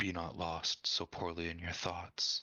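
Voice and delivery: hushed whispered line. Playing a character during a tabletop game, whispering a line. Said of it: "So I'm just whispering".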